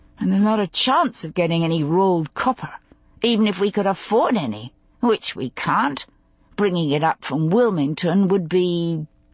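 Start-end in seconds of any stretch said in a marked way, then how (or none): none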